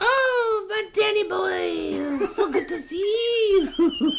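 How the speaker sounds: very high, very slow, drawn-out voice. Answering how Anti-Dragoo sounds: imitating Anti-Dragoo. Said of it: "What does she sound like?".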